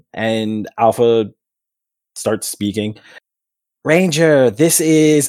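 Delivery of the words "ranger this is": high-pitched announcer character voice. Voicing Alpha speaking to a new Ranger: Alpha voice. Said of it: "to get an Alpha voice".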